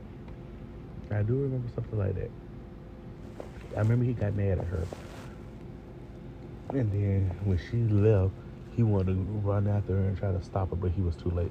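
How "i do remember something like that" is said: fast, rushed, rattled-off delivery.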